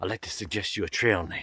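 gentle, kindly, soft half-whisper. Retelling a man who came up while the speaker set up camp, retelling a kind half-whisper. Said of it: "whispers to me".

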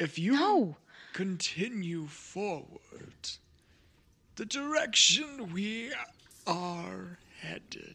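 odd, put-on fish-person creature voice. Voicing a fish person met by the party, fish-person creature voice. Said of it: "we're being approached by two fish people with mushrooms".

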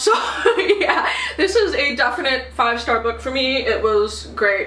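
choked-up, teary voice, crying through words. A reader wrapping up a book review, crying. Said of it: "and now I'm crying".

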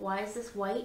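ordinary talk

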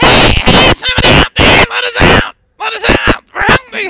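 very high, very loud squeaky voice. Game master voicing a voice the players hear calling out: high squeaky voice. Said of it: "you hear a high, squeaky voice say".

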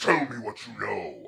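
compelling, rough, creaky voice of command. Describing the Emperor's Voice from a book's first chapter, booming voice. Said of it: "It's just like this booming voice".

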